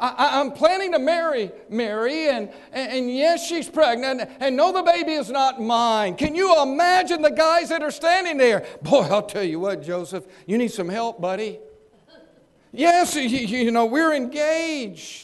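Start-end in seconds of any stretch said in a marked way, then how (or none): 0.0-6.2 put-on upset, troubled, distressed voice. Acting out a man telling the guys standing there about his fiancée, mock-distressed voice. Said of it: "in a distressed voice".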